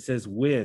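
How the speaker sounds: word with stressed with a falling tune. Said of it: "underline the word with".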